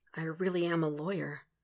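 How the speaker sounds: very quiet mumble of innocent awe. A man holding case files speaks, mumbled with innocent awe. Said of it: "he mumbles, some kind of innocent awe tinging his voice".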